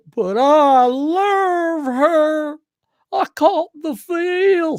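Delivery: mock Southern accent, high and slow.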